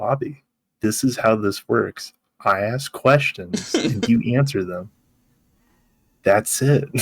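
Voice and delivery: put-on cool, calm, even-keeled, measured delivery. Recounting a TV scene where Cooper answers Bobby's outburst, retelling Cooper calmly. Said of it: "Cooper just calmly goes".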